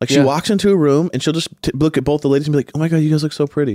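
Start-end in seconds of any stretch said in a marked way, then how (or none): 2.7-3.7 put-on nice, friendly, sincere voice, higher pitch. Retelling Gabby walking into a room: imitating Gabby being genuinely nice. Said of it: "genuinely nice to people".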